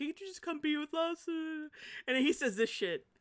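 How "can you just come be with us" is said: mock tearful crying voice, sincere, higher and quieter. Speaker retelling someone's sincere plea on the phone, imitating someone crying sincerely. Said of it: "She's being real sincere. Like she's crying on the phone".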